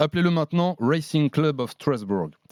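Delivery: bad, botched, badly failed English accent. Speaker announces the club's new English name: bad English accent. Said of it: "Catastrophique l'accent anglais".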